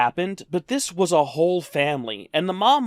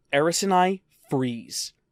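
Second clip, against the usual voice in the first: ordinary delivery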